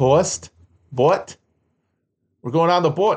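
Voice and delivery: Wisconsin accent with long O in toast. Show your favorite part of how people in Wisconsin talk, in a Wisconsin accent. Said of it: "the Wisconsin accent is the way they do O-A".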